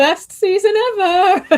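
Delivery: very high gushing voice, pitch up, ever drawn out. Imitating an actor on the red carpet praising the final season: imitating Emilia Clarke. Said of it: "Emilia Clarke on the red carpet being like".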